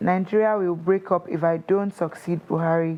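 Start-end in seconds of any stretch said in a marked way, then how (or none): none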